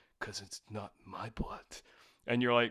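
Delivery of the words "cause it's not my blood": voice suddenly dropped a full octave, deep and hushed. Recounting a slasher film character's line, voice dropped an octave. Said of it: "he drops the an octave of his voice".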